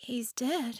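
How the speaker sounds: awed breathy murmur. A woman answers Pike's quavering question, breathing the words in wonder. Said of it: "she breathed in wonder".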